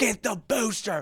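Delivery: put-on very high shout over crowd noise. Retelling telling a trainer what drink to fetch: retelling yelling over a loud crowd. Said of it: "yelling at him 'cause the crowd is loud".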